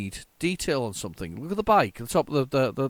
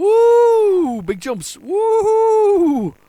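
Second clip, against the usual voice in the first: excited, shrill, booming, drawn-out whooping; 11 dB louder than usual. Watching big jumps in the game: excited whooping. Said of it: "I'm getting a bit excited".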